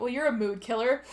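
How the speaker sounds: ordinary talk, nothing marked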